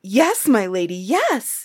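keen, slow, stretched-out voice. Asked by a lady whether he has been to her castle, he answers eagerly. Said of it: "Jack answered eagerly".

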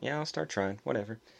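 mock calm, nonchalant brush-off. Retelling a driver's reply, imitating a nonchalant tone.

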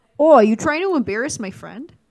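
put-on friendly Midwestern Wisconsin accent. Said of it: "That's how it would sound if he was in Wisconsin".

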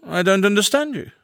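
cool, aloof, detached, slightly high voice. A man replies to a woman demanding an explanation: coolly.

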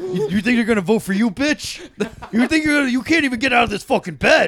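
very loud, shrill, high-pitched yelling. Acting out a crude bedroom scene: Trump impression. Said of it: "That was a good Trump impression".

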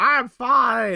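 very high, full-throated shout. Retelling a game scene where a character shouts: imitating Clay shouting. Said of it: "And then Clay shouts".

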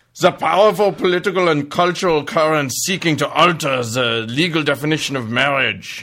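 put-on German-accented read. Reading out a quote from the Pope: Ratzinger with German accent. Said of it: "I should do it with a German accent".

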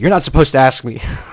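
put-on clipped, authoritative voice. Retelling what she answered when asked how's that, imitating her curt, authoritative reply. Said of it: "super curt and authoritative".

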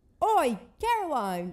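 poor put-on British accent, high-pitched and loud. Repeating a British man's greeting to a friend, bad British accent. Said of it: "I'm horrible at British that's accents".

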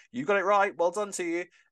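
high-pitched, very happy voice. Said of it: "You sounded so happy about that".

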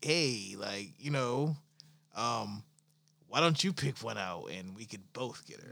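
smooth, laid-back, cool pitch, acting cool. Acting out how to smoothly suggest a threesome: acting smooth and cool. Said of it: "the cool way would be like".

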